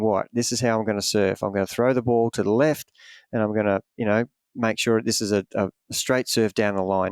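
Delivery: ordinary delivery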